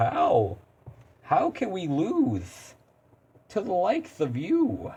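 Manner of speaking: put-on, slow, goofy, silly goofball voice. Reading a game character's dialogue aloud: silly goofy character voice. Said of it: "now it's like I'm trying to go Mister Silly Gooseman".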